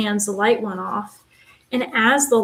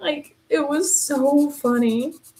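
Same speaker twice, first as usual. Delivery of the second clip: normal talking voice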